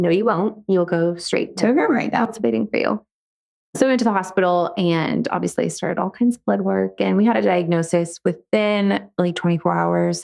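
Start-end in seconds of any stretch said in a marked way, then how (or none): 0.0-3.1 composed but firm, calm and assertive voice. Retelling a doctor's reply to a parent: imitating a calm but assertive voice. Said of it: "in her calm voice, but assertive".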